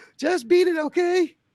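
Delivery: mock, very high-pitched put-on voice.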